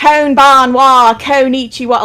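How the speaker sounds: southern drawl speaking Japanese. Imitating a video clip: southern accent speaking japanese. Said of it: "it's Southern person saying Japanese".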